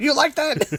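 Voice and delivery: shouted out, very high-pitched. Retelling someone who was imitating Counsell and shouting at him: imitating someone shouting.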